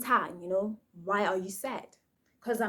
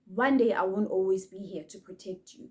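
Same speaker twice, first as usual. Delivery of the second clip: normal talking voice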